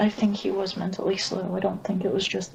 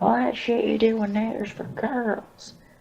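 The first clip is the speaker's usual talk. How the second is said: put-on ridiculously thick, laid-on Southern accent; 3 semitones higher than usual. Retelling a kid mocking the speaker for wearing makeup, ridiculously thick southern accent. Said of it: "he had a ridiculously thick southern accent".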